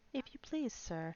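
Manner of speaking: small, soft, timid voice. Narrating Alice asking the rabbit for help, in a low, timid voice. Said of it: "she began in a low, timid voice".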